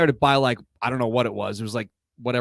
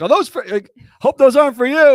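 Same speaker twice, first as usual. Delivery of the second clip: shrill, very high, very loud yell; 13 semitones higher, 9 dB louder than usual. Retelling a player yelling out while driving past: imitating John Roush yelling. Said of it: "And he yells out".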